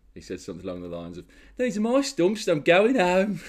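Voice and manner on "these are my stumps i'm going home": very high, exaggerated, ridiculous Birmingham accent. Retelling what a man said as he took his stumps home, ridiculous brummie accent. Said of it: "he has got a ridiculous Brummie accent".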